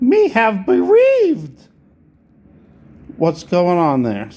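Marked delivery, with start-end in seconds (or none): 0.0-1.7 bad cartoon voice, very high, squealing and swooping. Wondering whether a line sounds like Jar Jar Binks: Jar Jar Binks voice. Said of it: "that was a terrible Jar Jar Binks impersonation".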